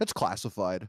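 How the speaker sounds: mock smug voice. Retelling answering what movie they were seeing: imitating a smug reply. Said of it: "really smugly".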